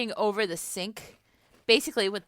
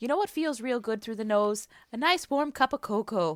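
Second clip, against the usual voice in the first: matter-of-fact, plain, stated as simple fact. Retelling a Frasier scene with Daphne at the kitchen table: matter-of-fact Daphne impression. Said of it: "just, like, matter-of-factly says".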